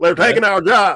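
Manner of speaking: put-on drawling Southern accent, pitched high. Speaker mocks how people in the Midwest and South talk: mocking Southern accent. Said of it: "They're talking like this".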